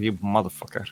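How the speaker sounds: low muttering under breath. Sliding down a rope, the speaker swears at him, cursing under breath. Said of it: "yelling at him like".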